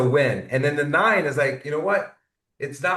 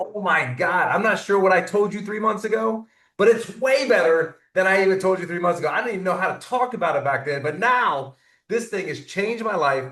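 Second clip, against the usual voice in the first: high, thrilled, eager, excited voice; 5 semitones higher than usual. Acting out someone answering a question about their device, in an excited voice. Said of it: "having the excitement in your voice".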